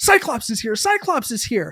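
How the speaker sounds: acted-out, high, loud shrieking scream. Retelling how a team lead ran back from the register: imitating someone screaming. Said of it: "screaming in my face".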